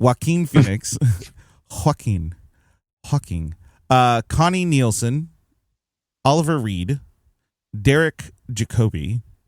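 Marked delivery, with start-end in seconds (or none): 0.0-3.5 name pronounced in a put-on Mexican accent. Speaker reading a movie's cast list aloud, mexican accent. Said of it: "I'm giving it a, a Mexican accent".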